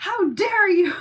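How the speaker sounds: very high, shrill, loud, affronted, indignant outburst. Retelling how a child got mad at a video: imitating an angry child. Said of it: "she got so mad".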